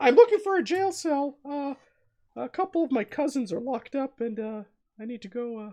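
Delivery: squeaky, very high-pitched made-up voice. Telling about a man at a jailhouse, speaking in a very high-pitched put-on voice. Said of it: "speaks in a very high pitched voice".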